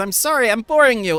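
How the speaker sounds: high, tearful voice broken up by crying. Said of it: "she starts crying and says".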